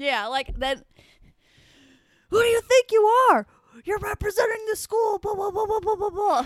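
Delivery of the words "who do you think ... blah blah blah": put-on yelling, higher and louder. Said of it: "sound exactly like Mister Babel".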